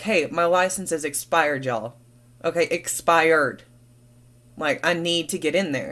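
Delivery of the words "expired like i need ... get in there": ordinary talk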